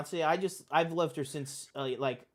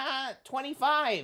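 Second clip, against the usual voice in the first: very high kids' cartoon character voice; 10 semitones higher than usual. Retelling what Tom Kenny said to Leonardo DiCaprio, speak in a SpongeBob voice. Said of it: "Tom Kenny in the SpongeBob voice goes".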